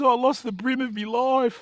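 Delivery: mock very high voice on verge of tears. Retelling a story of an angler who lost a fish: imitating someone nearly crying. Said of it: "virtually crying".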